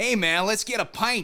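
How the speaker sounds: high, drawn-out, put-on American accent. Mocking how Americans say certain words, mock American accent. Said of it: "certain words when Americans say them... they don't sound fucking normal".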